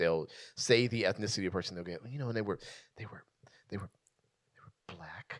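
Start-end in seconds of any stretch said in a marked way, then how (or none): 2.1-5.4 whisper, lower and quieter. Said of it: "That doesn't need to be whispered".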